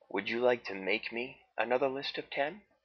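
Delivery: ordinary delivery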